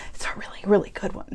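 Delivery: soft, hushed, whispered voice. Speaker telling viewers about a clearance sale, whispering. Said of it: "I don't know why I'm whispering".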